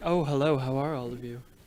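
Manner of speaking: grand, majestic, regal voice, hushed. Voicing a dead man a spell compels to speak, in a majestic voice. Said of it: "He has like this majestic voice".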